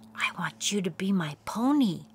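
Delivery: softly whispered. A princess speaks to the pony she has just found, whispering. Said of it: "the princess whispered".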